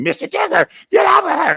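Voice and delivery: acted-out, very high, squealed, screaming voice. Mocking how someone screamed for help: mocking imitation of a scream. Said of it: "I ain't gotta scream".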